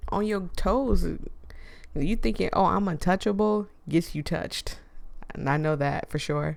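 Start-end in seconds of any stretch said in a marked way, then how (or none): none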